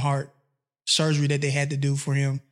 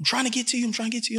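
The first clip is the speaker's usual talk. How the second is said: mock screaming and crying, higher pitch; 8 semitones higher, 3 dB quieter than usual. Retelling a mother's frantic phone call: imitating screaming and crying. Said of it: "screaming, crying on the phone".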